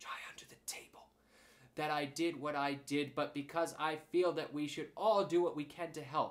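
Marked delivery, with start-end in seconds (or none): 0.0-1.1 hushed, whispered, carrying stage whisper. Reading a story aloud, a character suggests a hiding place: loud whisper. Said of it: "said in a loud whisper".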